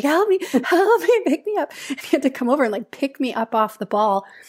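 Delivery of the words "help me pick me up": very high, drawn-out yell through laughter. Retelling yelling to her husband for help getting up, retelling a yell through laughter. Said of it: "through laughing".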